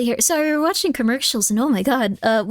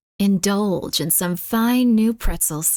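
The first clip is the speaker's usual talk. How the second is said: commercial announcer voice, lower; 4 semitones lower than usual. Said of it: "That voice got me".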